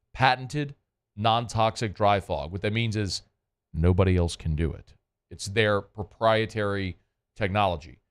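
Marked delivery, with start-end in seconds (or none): 0.1-2.5 slow, deliberate, each word spaced out with weight. Speaker describing a sanitizing service, stressing a phrase: said slowly. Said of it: "I want to say it slowly".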